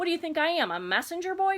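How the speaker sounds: grumbling, muttered tone. Narrator reads the rat's reply to another character, grumbling. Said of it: "grumbled the rat".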